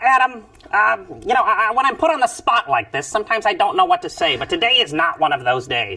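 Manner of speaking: very high character voice swooping around. Voicing a cartoon cockroach after being asked what he sounds like: Gilbert voice. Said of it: "Tell us what he sounds like".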